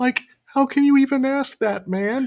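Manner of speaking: put-on whispered character voice. Retelling how the actor whispered back to Kira: whispered Shaggy voice. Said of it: "whispered back to him".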